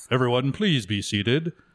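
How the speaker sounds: ceremonial PA announcer voice. Speaker recalls the guy with the announcing voice and imitates him: announcer voice. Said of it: "I did like the guy with the announcing voice".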